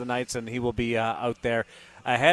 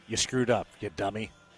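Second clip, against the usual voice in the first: put-on GPS navigation voice, lower and quieter; 3 semitones lower, 4 dB quieter than usual. Imagining a car navigation voice giving directions: Carnell's voice as navigation voice. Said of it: "you could get Carnell's voice as your, your navigation voice".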